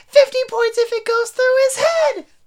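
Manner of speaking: shrill, very loud screech at full blast. Retelling a scene where Myrtle flies into Ron's face: imitating Moaning Myrtle mad. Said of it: "she gets so mad".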